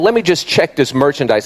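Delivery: ordinary delivery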